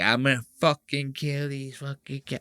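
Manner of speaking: put-on Puerto Rican mom voice and accent. Explaining what Puerto Rican moms say, imitating a Puerto Rican mom. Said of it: "That's like a Puerto Rican mom that does that. They go like".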